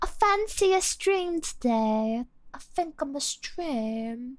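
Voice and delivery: poor put-on British accent. Trying out British phrases, in a bad British accent. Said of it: "My British accent is not very good".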